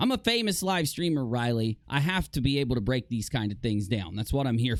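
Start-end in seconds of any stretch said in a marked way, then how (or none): none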